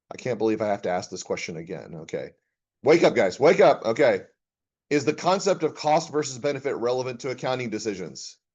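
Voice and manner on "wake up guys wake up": raised, pitched-up calling voice. Lecturer telling the class to wake up and pay attention: raised voice. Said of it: "when I raised my voice there".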